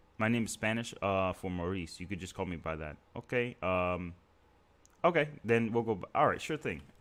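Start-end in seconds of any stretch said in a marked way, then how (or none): none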